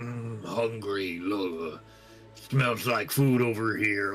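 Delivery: deep, low, big giant-creature voice. Describing a game scene, the player talks as a monster in a deep giant voice. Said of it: "like really deeper voice, like but in giant".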